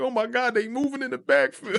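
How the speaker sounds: mock very high, thrilled, amazed shriek. Retelling screaming at the screen during the game: imitating own screaming. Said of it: "screaming at the screen".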